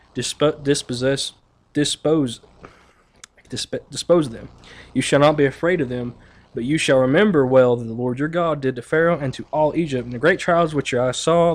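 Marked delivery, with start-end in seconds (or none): none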